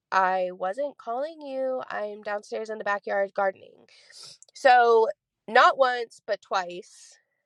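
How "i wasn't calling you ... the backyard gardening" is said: plain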